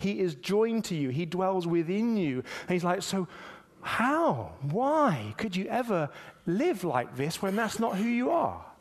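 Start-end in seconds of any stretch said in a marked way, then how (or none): 3.0-8.6 gentle, puzzled, bewildered, loving fatherly tone. Retelling his words, imitating a puzzled loving father. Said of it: "scratching his head in a really sort of loving father".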